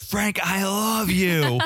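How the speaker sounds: dramatic slow-motion yell, very high and slow. Retelling a declaration from a show: imitating someone yelling. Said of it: "And he just yells it out".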